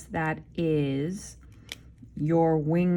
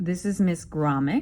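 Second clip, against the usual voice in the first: plain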